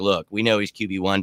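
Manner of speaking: ordinary delivery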